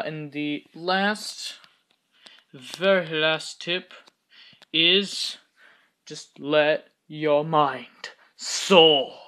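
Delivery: slow British accent. Giving a final building tip in a video, slipping into a British accent. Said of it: "I don't know why I'm going into this British accent".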